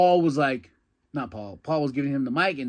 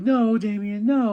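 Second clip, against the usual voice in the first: put-on, high-pitched, begging, pleading cry; 9 semitones higher, 3 dB louder than usual. Retelling a match finish, voicing her plea: imitating someone begging. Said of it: "She's begging".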